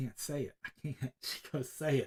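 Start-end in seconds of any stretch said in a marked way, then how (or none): 0.0-1.1 quieter whisper. Retelling how he answered Trinity when she urged him to say it; retelling a whisper. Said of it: "I'm whispering to her".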